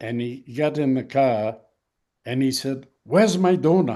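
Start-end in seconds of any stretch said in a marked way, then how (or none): 3.0-4.0 put-on French accent. Retelling what he said getting back in the car, in his French accent. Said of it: "in his French accent".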